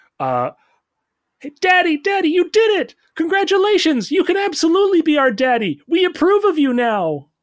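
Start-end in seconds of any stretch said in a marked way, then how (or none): 1.4-7.2 put-on very high, loud, squealing baby raccoon voice. Voicing three baby raccoons cheering for their new dad: baby raccoon voice. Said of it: "three small little baby raccoons".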